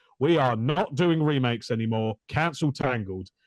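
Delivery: ordinary talk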